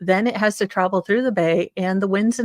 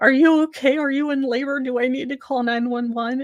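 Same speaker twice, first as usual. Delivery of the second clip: put-on nerdy cartoon voice, much higher pitch; 5 semitones higher than usual. A woman retells what a sixteen-year-old boy said to her, Simpsons nerd voice. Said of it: "he kind of had this voice like the S the Simpsons nerd".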